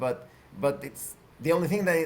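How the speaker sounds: ordinary delivery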